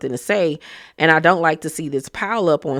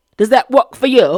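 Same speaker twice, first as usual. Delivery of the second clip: high, raised put-on English accent; 7 semitones higher, 7 dB louder than usual. Retelling Sutton answering Dorit, Sutton's put-on English accent. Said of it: "maybe if I speak in an English accent".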